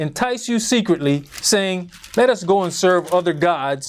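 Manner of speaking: plain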